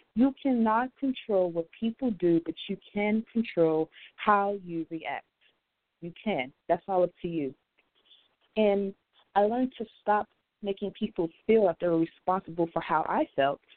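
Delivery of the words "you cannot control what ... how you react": slowed down, unhurried, each word set down carefully. Repeating a point after rushing it, saying it a little slower. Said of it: "I'm going to say that a little slower".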